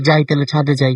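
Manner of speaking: normal talking voice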